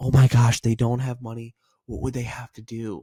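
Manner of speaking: worried, sympathetic, caring tone. Showing the right tonality for someone with no money: concerned tone. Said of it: "use the right tonality, that concerned".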